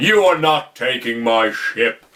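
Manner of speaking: put-on deep voice, dropped low and slow. Retelling a scene where a character fakes a deeper voice: imitating Quill's put-on deeper voice. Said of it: "are you putting on a deeper voice to match his?".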